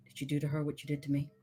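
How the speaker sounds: muttered quietly under breath. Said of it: "just sighs under her breath and turns around. She goes".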